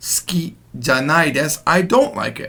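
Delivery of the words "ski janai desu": ordinary delivery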